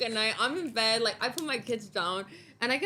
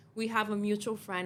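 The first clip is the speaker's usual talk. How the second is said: normal talking voice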